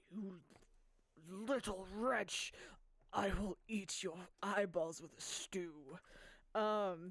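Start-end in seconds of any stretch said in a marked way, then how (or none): 0.1-5.7 nasty, sneering hobgoblin voice. Voicing a hobgoblin who sneers at the listener: sneering hobgoblin voice. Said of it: "the hobgoblin sneers and you goes".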